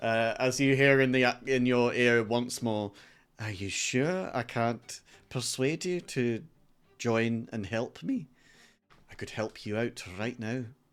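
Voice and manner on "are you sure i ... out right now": put-on a touch of Scottish accent. Voicing a creature speaking into a player's ear: slight Scottish accent. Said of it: "what sounds like a bit of a Scottish accent".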